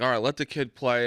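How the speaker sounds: ordinary talk, nothing marked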